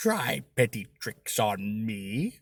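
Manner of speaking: contemptuous, scornful, sneering villain voice. Narrating a story, reading a mysterious voice's taunt: sneering. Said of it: "the voice sneers".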